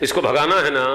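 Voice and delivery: ordinary talk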